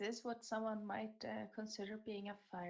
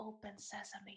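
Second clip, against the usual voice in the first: barely audible, very quiet whisper under the breath; 9 dB quieter than usual. Playing a character who tries a password at a door: whispering under breath. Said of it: "I whisper under my breath".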